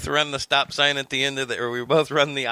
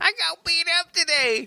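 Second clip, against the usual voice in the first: very high, broad put-on hillbilly accent. Acting out an old man from the retirement home reporting he got beaten up, super hillbilly voice. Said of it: "Why did we just go super hillbilly on that?".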